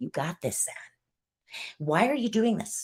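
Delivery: soft, loving, kind, caring tone. Speaker voices the encouraging inner voice they say they need: caring, loving voice. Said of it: "I need a caring, loving voice to go".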